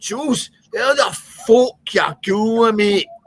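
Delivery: put-on very high, loud Glaswegian accent. Retelling how Scotty used to greet the speaker, imitating Scotty's Glaswegian accent. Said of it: "he was a Glaswegian".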